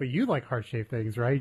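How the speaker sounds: normal talking voice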